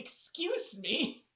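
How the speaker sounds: booming, high-pitched, loud, belted character voice. Teasing a fellow player by imitating their character: imitating Grayson tone. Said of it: "your Grayson tone going".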